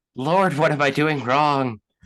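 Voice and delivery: high-pitched, defeated crying out. Describing a character who looks defeated for a second, crying out in defeat. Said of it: "looks defeated for a second, and cries out like".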